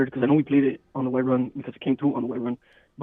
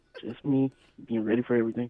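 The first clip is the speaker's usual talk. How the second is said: soft, subdued, sad-sounding little voice; 5 dB quieter than usual. Speaker describing himself as always prepared, in a sad voice. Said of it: "Why do you sound so sad?".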